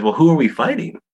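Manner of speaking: mock sugary, very sweet, high voice. Describing a favorite movie scene, retelling her question very sweetly. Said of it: "like, very sweetly".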